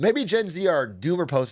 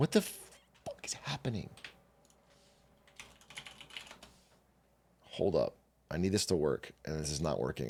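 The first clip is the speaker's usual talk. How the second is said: fast, panicked whisper; 12 semitones lower, 11 dB quieter than usual. Trying to get the stream working, panicking. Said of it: "and I'm panicking".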